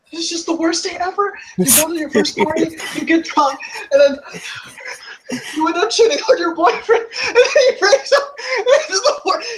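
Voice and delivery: distraught, crying, very high wailing lament. Retelling what Caroline said on finding her purse missing: imitating Caroline crying. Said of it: "[name]'s crying now".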